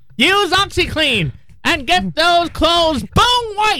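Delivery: confident, self-assured cartoon-villain voice. Joking about a cartoon villain as product pitchman, doing Skeletor voice. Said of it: "I'm Skeletor!".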